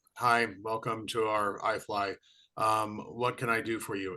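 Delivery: mock completely flat, lifeless, low monotone delivery. Retelling how a receptionist greeted a visitor: imitating a completely flat delivery. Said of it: "she was completely flat".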